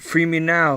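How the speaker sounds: insistent, demanding voice. A captive answers the one who promises to come back and free it, in a demanding tone. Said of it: "I don't like your tone".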